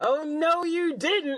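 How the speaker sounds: high-pitched, loud yelling. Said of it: "she just yells".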